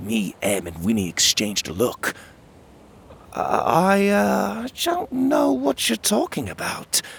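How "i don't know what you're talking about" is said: sheepish, abashed, very high and slow. A little girl demands who took her basket; the narrator answers sheepishly. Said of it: "I said sheepishly".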